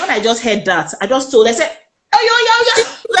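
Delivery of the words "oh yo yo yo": high-pitched, frantic, crazed yelling. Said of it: "like a madman".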